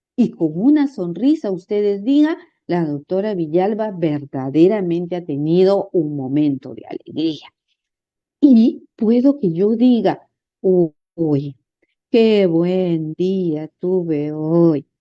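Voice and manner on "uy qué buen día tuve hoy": very slow, dragged-out ironic sarcastic drawl. Showing how tone of voice alone changes a phrase's meaning, sarcastic. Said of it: "solamente con la diferencia de mostrar el tono de voz, lo que he remarcado, he podido decir que realmente mi día no fue un verdadero día".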